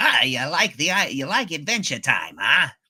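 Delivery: sudden switch into a cartoon voice. Retelling how a voice actor answered fans: Ice King voice. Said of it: "switches right to the Ice King".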